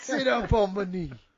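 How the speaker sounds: old-timey cartoon grandpa voice. Imitating a grandfather giving advice: imitating a grandfather. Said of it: "mixed with a little Adam Sandler".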